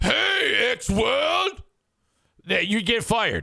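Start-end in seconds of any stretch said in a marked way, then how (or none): 0.0-1.6 put-on voice pitched high and rough. Explaining what you can't do on the radio, O.J. Simpson impression. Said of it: "this is an impression of O.J. Simpson".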